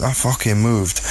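ordinary talk, nothing marked

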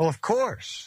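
playful, mischievous tone. Giving a standard reply about reading the Bible literally, mischievous smile in the voice. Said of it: "You can hear the mischievous smile in his voice".

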